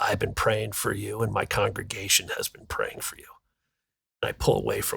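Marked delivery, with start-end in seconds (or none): 0.0-3.2 hushed, private whisper, close to the ear. Retelling a man whispering in his ear during a bear hug: retelling a whisper. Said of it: "Brother Bob whispers".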